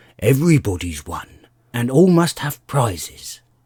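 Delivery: grave and solemn. A dodo formally announces the result of a contest to everyone waiting, solemnly. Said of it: "said the dodo solemnly, / the dodo replied very gravely. / he went on".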